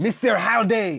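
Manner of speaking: put-on a little bit of French accent. Asked to say a line in that voice, speaker does it: slightly French accent. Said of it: "That went French a little bit".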